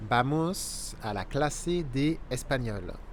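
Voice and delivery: slow, deliberately unhurried Spanish.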